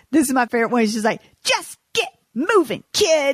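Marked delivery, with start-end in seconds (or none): 1.4-3.3 mean, pitched-up, high voice. Quoting a favorite line from a movie: mean elf from A Christmas Story. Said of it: "that mean elf".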